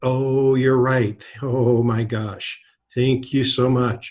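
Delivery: put-on trembling grateful voice. Speaker acts out an agent thanking someone; imitating a shaky grateful voice. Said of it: "their voice gets a little shaky".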